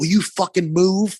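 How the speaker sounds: wild, high-pitched, angry yelling. Retelling a roller hockey game, yelling at teammates: imitating someone yelling. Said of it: "yelling at these guys".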